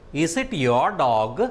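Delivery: rising pitch, tune climbing toward dog. Intonation lesson, question example: rising intonation on dog. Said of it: "my speech reached a higher level. I started it at a low level and it reached a higher level".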